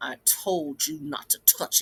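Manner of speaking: stern, authoritative scolding tone. Speaker retells being scolded at four years old: retelling a big cousin's scolding. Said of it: "in a big cousin voice scolded me".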